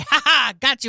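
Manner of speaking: triumphant, taunting tone. Joking about trapping a cat: mock gloating. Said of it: "And I say".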